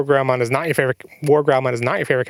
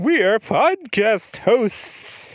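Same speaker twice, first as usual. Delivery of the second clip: high, eerie, ghostly, spooky put-on voice; 8 semitones higher than usual. A podcast host addresses the audience in a spooky voice. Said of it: "now you just seem like you're doing a spooky voice".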